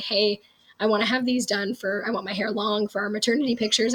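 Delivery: ordinary delivery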